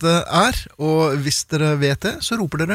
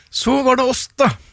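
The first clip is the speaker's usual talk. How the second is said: forced out through clenched teeth, pitched higher; 8 semitones higher than usual. A host wrapping up the show with co-hosts, said through gritted teeth. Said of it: "Ikke si det med sammenbitte tenner".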